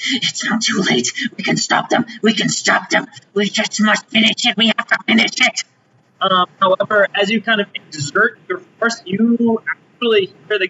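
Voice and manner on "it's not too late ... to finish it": angry, chittering goblin-like chatter. Voicing a ghost that has entered the listener's body, in a chittering angry goblin voice. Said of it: "chittering and angry goblinoid voice".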